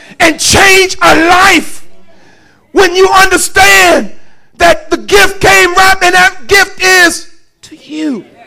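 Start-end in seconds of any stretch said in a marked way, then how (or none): 0.2-1.9 loud, high cry with tears of joy. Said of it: "I got tears in my eyes".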